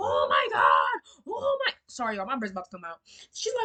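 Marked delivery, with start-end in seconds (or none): 0.0-1.7 very slow, low, swooping, wailing hysterical sobbing. Retelling how a woman talked to the officers, imitating someone hysterical. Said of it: "she's hysterical".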